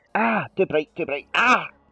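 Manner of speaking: anguished, suffering, high pained cry. Retelling walking out into bright sunlight: retelling own pained cry at the sun. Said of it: "As soon as I walked outside".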